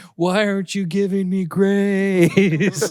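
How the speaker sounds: put-on high, loud, slow, drawn-out wailing child's crying voice. Retelling how the oldest child pleads when in trouble: imitating a child crying. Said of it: "she's just crying".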